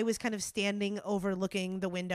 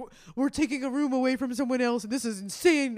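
put-on, loud, angry ranting; 4 semitones higher, 5 dB louder than usual. Retelling what a mad dad said about a hotel room: imitating angry dad. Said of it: "my dad was so mad. He's like".

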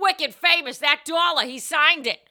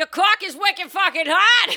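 loud yelling in a put-on Boston accent; 4 semitones higher than usual. Speaker riffing on a Boston stripper bit, in a Boston accent. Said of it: "I got to do a Boston accent".

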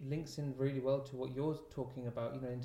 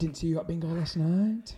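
put-on Yorkshire accent, higher and louder; 4 semitones higher, 10 dB louder than usual. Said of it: "I'm [name]".

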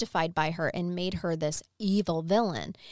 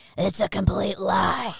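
raspy put-on drunk voice, louder; 6 dB louder than usual. Reading out a lawyer's outraged quote in a raspy voice. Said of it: "so his probably had, like, a raspy".

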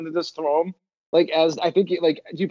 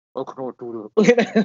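deep, very slow, muffled voice with every word drawn out; 4 semitones lower than usual. Retelling a player doing a Kylo Ren voice behind his hand: imitating a Kylo Ren voice. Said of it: "he put his hand over his mouth and goes".

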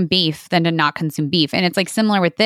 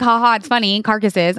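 tongue-in-cheek, jokey, amused ha-ha laugh; 2 semitones higher than usual. Showing how a laugh was not meant: mock amused laughing. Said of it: "not like".

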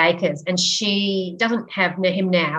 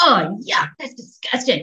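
play-acted, projected announcer-style proclaiming for everyone to hear; 4 semitones higher than usual. Parent recalling their young son in a restaurant, retelling a loud announcement. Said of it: "he just announced loudly to the whole restaurant".

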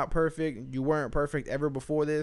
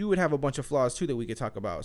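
ordinary delivery

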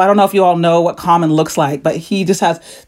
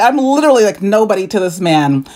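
usual speaking voice

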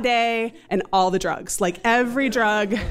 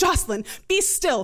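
terse, clipped, urgent, pitched-up delivery; 6 semitones higher than usual. Retelling what the doctor suddenly said, mimicking his clipped, urgent voice. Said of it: "his voice becomes clipped and urgent".

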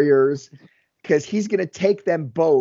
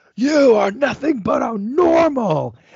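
raw, intense, all-out high-pitched acted scream; 9 semitones higher than usual. Recounting a wrestler grabbing the interviewer by the lapels, retelling a scream. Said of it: "pulls him in and screams".

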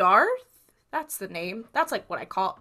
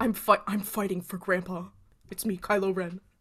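put-on character voice with one stumbling restart; 5 dB quieter than usual. Joking about fighting for a grandpa: imitating Kylo Ren. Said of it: "She's like".

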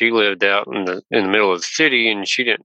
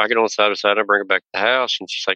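normal talking voice

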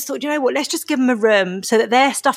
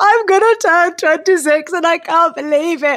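mock loud, high, blubbering, weepy toddler-style tantrum; 7 semitones higher, 5 dB louder than usual. Retelling lying on the floor weeping in a tantrum: imitating own past weeping tantrum. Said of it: "weeping, like, having a toddler tantrum".

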